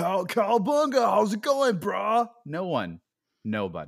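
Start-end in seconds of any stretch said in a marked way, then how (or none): 0.0-2.3 very high, loud, raised cartoon voice in dude-speak. Describing what nobody around here says: Ninja Turtles talk. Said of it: "Nobody talks like Ninja Turtles down here".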